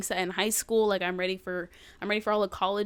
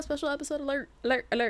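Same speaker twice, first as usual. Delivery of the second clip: high, news-alert style announcer voice; 5 semitones higher than usual. Podcaster announcing a special episode to her listeners, spreading-the-news voice. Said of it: "the like spreading the news voice".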